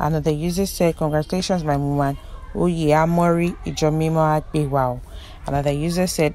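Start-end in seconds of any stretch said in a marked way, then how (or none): none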